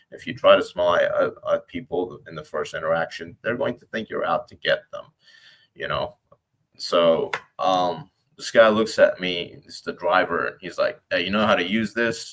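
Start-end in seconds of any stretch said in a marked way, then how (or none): 11.1-12.3 casual, offhand, slightly dismissive tone. Quoting the driver's question to the speaker, mimicking a dismissive tone. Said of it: "with a little bit of disregard".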